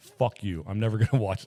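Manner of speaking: furious, angry outburst. Discussing a horror sequel with another speaker: angry. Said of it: "Sorry, I'm very angry about this".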